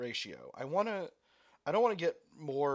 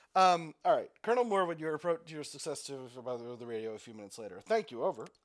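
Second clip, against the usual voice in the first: ordinary delivery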